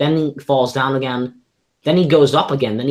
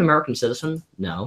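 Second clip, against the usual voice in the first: usual speaking voice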